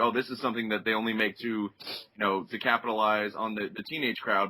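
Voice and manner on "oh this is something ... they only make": ordinary delivery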